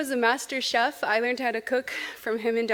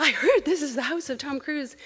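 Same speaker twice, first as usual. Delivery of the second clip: put-on South African accent, British-tinged; 3 semitones higher than usual. Retelling a friend asking at a door at three in the morning: British South African accent. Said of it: "in her British South African accent".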